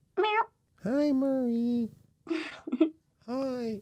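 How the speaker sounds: very high, soft, squeaky, silly cat voice. Introducing his cat and answering for him, stupid voice as [name]. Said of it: "embarrassing him with a stupid voice".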